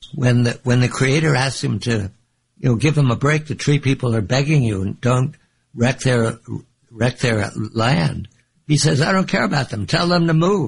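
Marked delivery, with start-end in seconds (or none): 9.0-10.7 mock grumpy, cranky beaver voice. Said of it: "he's cranky".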